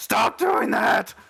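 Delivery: loud screaming in pain. Voicing a man who turns and screams at the ceiling: screaming at the ceiling. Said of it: "he turns and screams at, like, the ceiling".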